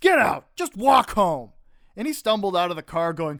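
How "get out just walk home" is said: exasperated, fed-up yell, loud and high. Retelling being fed up with a drunk friend in the car: imitating own fed-up yell. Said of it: "got fed up with him and yelled".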